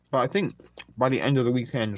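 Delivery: talking with mouth full. Speaking to Anika while eating, talking with mouth full. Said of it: "sorry to speak with my mouth full".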